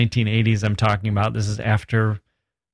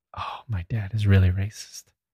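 whispered; 4 dB quieter than usual. Retelling what a friend said about his dad: imitating a whisper. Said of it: "the kid whispered to me".

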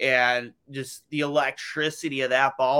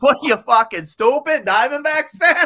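put-on thick Boston accent, very loud, high, shrill yell; 13 semitones higher, 8 dB louder than usual. Retelling what a guy outside Fenway said to a Diamondbacks fan, heavy Boston accent. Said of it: "it's a heavy Boston accent".

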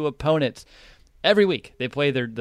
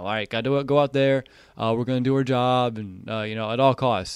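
mock flat, unexcited, unenthusiastic tone. Retelling a quarterback's pre-game huddle speech: imitating Mitch's flat pep talk. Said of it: "it just sounds like he's just talking".

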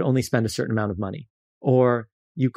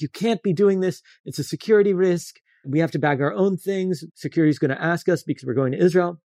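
acted man's yell, higher; 6 semitones higher than usual. Retelling how a random man at the checkout started yelling at them: imitating a man yelling. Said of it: "he starts yelling at us".

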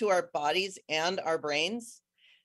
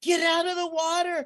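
imitated yelling, higher; 11 semitones higher, 4 dB louder than usual. Retelling how people on the sidewalk yelled at the speaker: imitating people yelling a warning. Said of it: "the people on the sidewalk were yelling at me".

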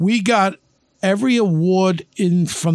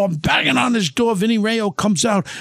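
normal talking voice

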